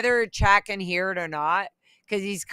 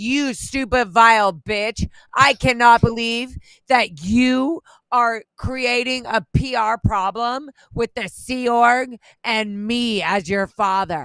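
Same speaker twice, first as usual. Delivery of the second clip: put-on furious, slow, every word deliberate; 3 semitones higher, 4 dB louder than usual. Retelling what dad said when so mad at them: imitating an angry dad. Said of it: "my dad is basically being so mad at me".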